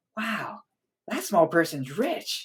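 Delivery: put-on small child's high voice. Voicing small kids reacting to a gnome giving out gold: voicing small kids. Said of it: "smaller kids go like".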